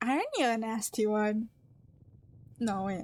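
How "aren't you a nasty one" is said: raspy, androgynous, mocking character voice. Voicing a figure in a game: raspy androgynous mocking voice.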